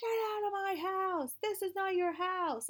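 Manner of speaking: very high-pitched, piercing scream. Retelling a sleep paralysis dream where people screamed: imitating people screaming. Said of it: "these people screaming at me".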